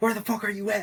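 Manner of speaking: put-on tearful, frantic, high-pitched panicked screaming. Speaker recounts his mom's reaction to hearing he crashed, imitating her screaming. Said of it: "she started screaming like".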